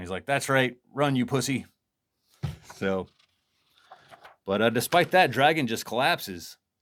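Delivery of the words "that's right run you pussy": put-on mocking, laughing voice. Retelling a comic scene, Dragon taunting a fleeing enemy: imitating Dragon laughing mockingly. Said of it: "Dragon is just, like, laughing at this clown".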